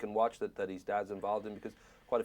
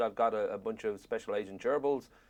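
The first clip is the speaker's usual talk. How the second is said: usual speaking voice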